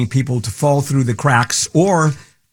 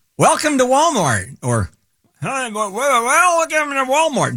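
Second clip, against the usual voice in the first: put-on, very high, swooping old-person voice; 12 semitones higher than usual. Imitating an elderly store greeter welcoming shoppers: imitating an elderly greeter. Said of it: "Did I do a good job of making myself sound old?".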